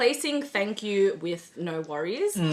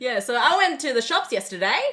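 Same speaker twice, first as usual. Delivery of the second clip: rising, question-like uptalk on yesterday; 4 semitones higher than usual. Demonstrating how Aussies end sentences like questions: rising question-like intonation. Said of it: "adding inflection to the end of every sentence so that it sounds like you're constantly asking questions".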